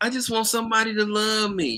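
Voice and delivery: high, put-on, girly woman's voice. Describing how women talk about wanting love, imitating a woman's voice. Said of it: "That's what women talk".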